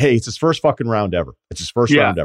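ordinary delivery

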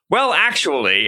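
ordinary talk

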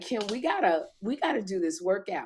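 usual speaking voice

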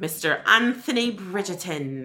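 terrible, clumsy, put-on British accent. Introducing season two's leading man by name in a terrible British accent. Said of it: "That's my terrible accent".

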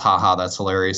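ordinary talk, nothing marked

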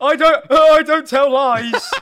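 pretend sobbing. Acting out a hypothetical person coming up to strangers, mock crying. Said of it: "If you came up to them crying".

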